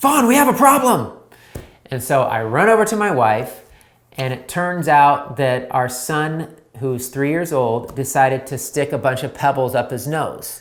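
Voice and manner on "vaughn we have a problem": alarmed, urgent, very high-pitched, fast delivery. Retelling the same call twenty seconds later: imitating wife's urgent call. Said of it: "it went to".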